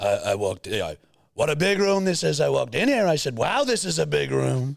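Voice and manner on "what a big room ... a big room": high, pitched-up put-on voice sounding smug and self-impressed. Showing how a comedian does it: Donald Trump impression. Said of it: "I've seen Shane Gillis do Trump".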